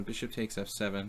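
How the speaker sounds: usual speaking voice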